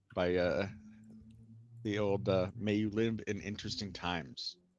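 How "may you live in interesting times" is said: plain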